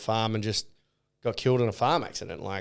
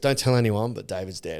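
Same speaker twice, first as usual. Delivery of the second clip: mock-sad voice, imitated sadness. Retelling a celebrity housemate sharing news with another housemate, imitating someone sad. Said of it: "And she's sad".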